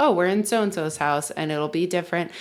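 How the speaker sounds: normal talking voice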